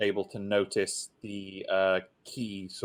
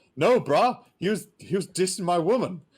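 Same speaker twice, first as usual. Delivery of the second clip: reenacted man's shout, much higher and louder; 10 semitones higher, 7 dB louder than usual. Retelling a fight, imitating a man shouting as two guys restrain him. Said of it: "this guy's shouting".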